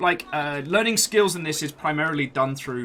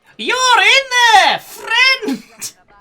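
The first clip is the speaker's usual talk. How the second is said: very high, slow, carrying skeleton yell; 10 dB louder than usual. A narrator voices a skeleton calling out from the courtyard: yelling skeleton voice. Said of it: "Yells a skeleton from the courtyard".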